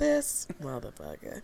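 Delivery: put-on whisper. Voicing what someone disapproving was hopefully whispering, in a mock whisper. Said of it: "Hopefully he was whispering like".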